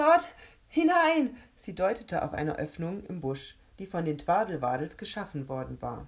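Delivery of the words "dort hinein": shrill, very loud, very high blurt between laughs. Rebecca, rolling on the ground with laughter, points to an opening, blurted between laughs. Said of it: "stieß zwischen zwei Lachern hervor".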